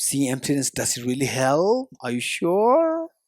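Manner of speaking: very sarcastic, swooping, doubtful tone. Explaining doubt, the third one, by acting it out: mock-sarcastic doubting. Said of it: "very sarcastic".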